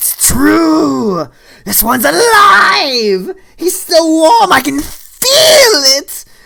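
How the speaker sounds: excited goblin shriek, very high and very loud. Voicing a goblin that jumps onto a player character's back, screaming goblin voice. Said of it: "And he screams".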